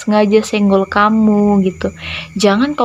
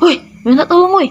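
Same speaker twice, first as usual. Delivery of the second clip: blunt, rude, impolite, pitched-up delivery; 9 semitones higher than usual. Teaching how to ask for help politely, showing the impolite way: rude, impolite request. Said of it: "Nggak kayak gini ya, ... nah itu kurang sopan ya".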